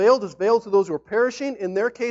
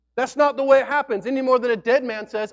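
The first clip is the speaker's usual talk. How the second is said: ordinary delivery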